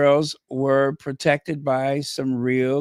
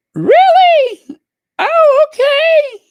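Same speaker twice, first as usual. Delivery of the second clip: raised pitch, higher and louder; 11 dB louder than usual. Reacting with surprise to a kind gesture: voice getting high. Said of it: "Why is my voice getting so high?".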